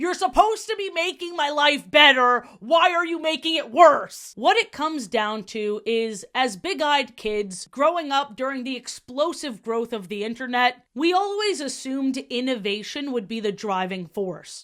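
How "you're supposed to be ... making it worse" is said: loud, yelling, complaining tone. Acting out how you yell at a robot character like you do with Siri, acting out yelling at a machine. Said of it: "yelling at her like I do with Siri".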